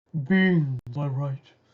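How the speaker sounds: grand, resounding, godlike proclaiming voice. Giving beans to the multiverse, the character speaks in a booming voice. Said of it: "and your voice booms".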